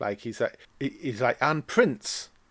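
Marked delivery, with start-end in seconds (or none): 1.4-2.3 deliberately misplaced stress across "and prince". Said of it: "He's doing the dodgy emphasis deliberately".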